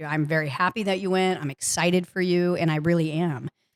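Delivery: ordinary delivery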